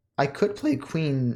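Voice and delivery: voice cracking and breaking mid-line. Thinking aloud over a chess move, voice cracking. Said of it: "my voice crack".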